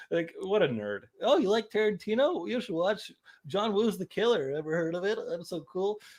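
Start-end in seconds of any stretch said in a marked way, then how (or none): 1.2-6.0 put-on too-cool voice, pitched up. Recalling slacking off at the counter, mimicking how he used to talk: impression of his younger self. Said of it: "that's a dead on impression of you younger".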